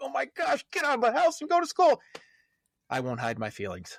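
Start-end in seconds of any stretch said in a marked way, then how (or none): 0.0-2.0 giddy, very high-pitched gleeful excitement. Acting out a parent glad the kids return to school: acting out a giddy parent. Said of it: "a little bit of giddiness in your voice".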